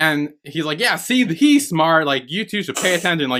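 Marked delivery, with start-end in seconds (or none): 0.8-3.3 mock bossy, boastful, high-pitched scolding. Retelling a scene where Tenkun scolds the bodyguards: imitating Tenkun yelling. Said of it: "yelling at the other bodyguards".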